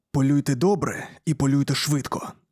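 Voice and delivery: ordinary talk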